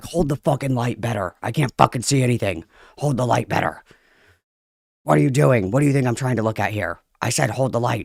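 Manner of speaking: mock furious, freaking-out rant. Retelling their own dad crash out while busy at home, retelling own freak-out. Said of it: "I was freaking the fuck out".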